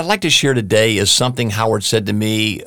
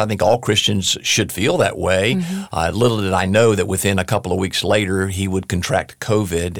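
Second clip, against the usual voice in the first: ordinary talk, nothing marked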